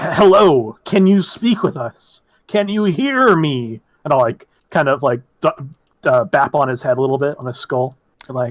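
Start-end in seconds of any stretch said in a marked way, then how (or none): 0.0-3.8 very slow, loud, drawn-out shouting voice. In a tabletop game, a player asks someone if they can hear, shouting voice. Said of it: "doing that like shouting voice".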